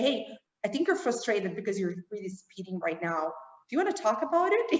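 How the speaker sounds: very friendly, kindly, amiable tone. Voicing a car that senses the driver is frustrated: very friendly voice. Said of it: "with a very friendly voice".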